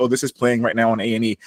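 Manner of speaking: ordinary talk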